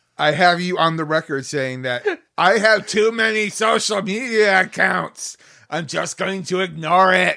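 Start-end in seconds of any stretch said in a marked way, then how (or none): 2.4-7.4 loud, bad TV news anchor voice. Quoting the other speaker's recorded remark back to him, do a bad Jared impression. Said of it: "That was not my best Jared impression".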